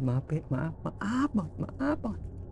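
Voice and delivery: high, soft, timid, frightened, pleading voice.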